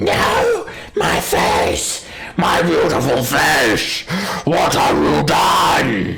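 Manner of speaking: high, screeching dragon-like cry. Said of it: "he just screeches".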